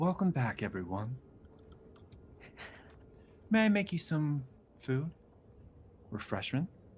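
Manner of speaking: smart-speaker voice assistant tone. Voicing a bartender welcoming everyone back: soft Siri-like voice. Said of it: "now he's just Alexa".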